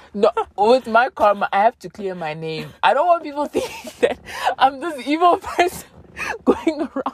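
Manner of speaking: laughing through the words. Addressing the audience, the speaker laughs while talking. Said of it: "I'm so sorry for laughing like this".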